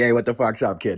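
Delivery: put-on heavy Boston accent. Showing how not to walk into a job interview: thick Boston bar accent. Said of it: "walk into the job interview like".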